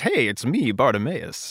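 funny, goofy, animated character voice with swooping pitch. Summing up a book made of footnotes, in a Bartimaeus funny voice. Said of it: "let me tell you everything in a funny voice".

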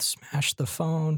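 muttered aside. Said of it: "I heard [name] mutter under his breath".

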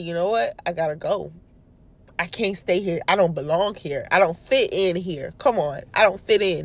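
ordinary talk

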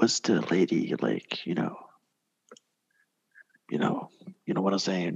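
hushed whisper. A character whispers a question to the boy, whispering. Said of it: "I'm gonna whisper to the boy".

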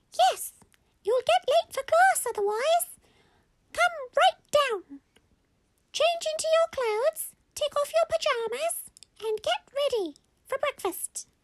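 very high, sweet, squeaky little voice. Narrating a story, Mummy tells them to come downstairs, squeaky, sweet voice. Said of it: "the voice was so squeaky and so, you know, sweet".

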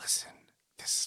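put-on serious whispering detective voice. Describing a TV detective who gets serious: imitating Olivia Benson whisper-talking. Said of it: "whisper talking to people".

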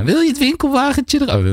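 put-on Limburg accent. Repeating what someone asked the speaker, in a put-on Limburg Dutch accent. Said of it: "Met een Limburgs accent natuurlijk".

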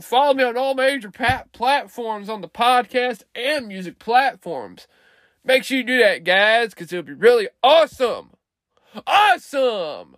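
tipsy, buoyant, excited, sing-song delivery. Podcaster asking listeners to follow him on all platforms, getting loud and excited. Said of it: "Sorry if I'm getting loud".

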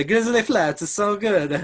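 fake Italian accent in a very high voice. Asked for one sentence in an Italian accent, put-on Italian accent. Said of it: "Grizzly Flats in one sentence, Italian accent. Go".

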